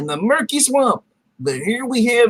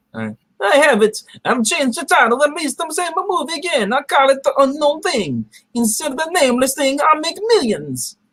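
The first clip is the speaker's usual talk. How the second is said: put-on bad Italian accent; 4 semitones higher than usual. A character pitches a renamed movie title, in a bad italian accent. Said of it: "putting on a bad Italian accent".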